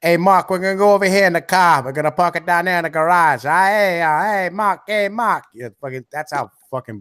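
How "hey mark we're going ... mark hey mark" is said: put-on Boston accent, R's dropped, pitched up. In a conversation about accents, showing how people from Boston talk: imitating a Boston accent. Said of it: "you're gonna talk about Boston".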